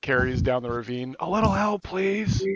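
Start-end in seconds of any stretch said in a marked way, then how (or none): 1.2-2.5 loud, drawn-out stage whisper. A player's character calling for help down a ravine, in a loud whisper. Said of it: "whisper really loudly".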